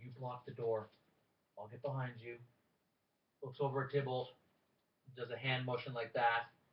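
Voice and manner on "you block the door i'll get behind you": soft half-whisper, close in. Game narrator voices a character speaking into a player's ear, half-whispering. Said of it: "whispers in your ear".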